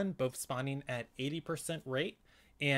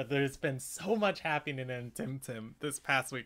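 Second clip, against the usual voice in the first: bursting excitement with voice breaking and cracking. Opening the show for the audience: voice cracking with excitement. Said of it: "My voice cracked there".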